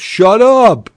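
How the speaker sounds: shrill, very high, loud voice. Retelling how the friend turns around and answers: imitating Vinny. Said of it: "he turns around and he goes".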